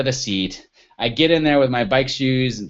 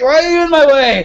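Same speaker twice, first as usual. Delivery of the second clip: very high, loud, annoyed scream; 14 semitones higher, 7 dB louder than usual. Cyclist retelling finding sheriffs blocking the bike path, retelling a scream. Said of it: "And so I scream at them".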